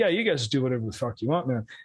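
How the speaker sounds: put-on Glasgow accent. Retelling Mark Dallas's reply to a promo-video idea, Mark Dallas's flat Glaswegian accent. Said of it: "super flat, heavy Glaswegian Scottish accent".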